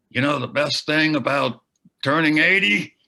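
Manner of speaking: very loud, high, booming voice. Retelling a friend's birthday speech, imitating Bill's voice. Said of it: "I try to capture his voice".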